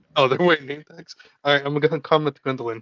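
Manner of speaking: ordinary delivery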